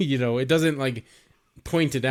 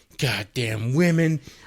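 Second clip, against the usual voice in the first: mock, put-on angry outburst. Retelling a film scene where a man walks around with a machete: imitating an angry man.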